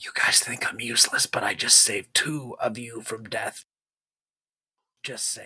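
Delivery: soft, hushed whisper under the breath. A game master voices a character who has just revived two companions, whispering. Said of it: "And he whispers".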